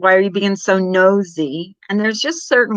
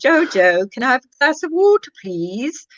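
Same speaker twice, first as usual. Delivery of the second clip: playful put-on English accent, pitched up; 5 semitones higher than usual. The speaker shows off their go-to put-on english accent. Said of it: "I like my English accent".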